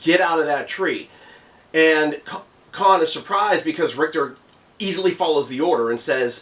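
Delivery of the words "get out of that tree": ordinary talk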